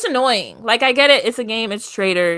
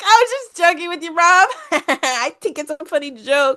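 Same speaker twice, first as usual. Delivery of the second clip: put-on giggly, giggling speech, higher pitch; 6 semitones higher than usual. Retelling what a contestant said to Rob: imitating someone giggling. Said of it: "she is laughing and giggling up a storm".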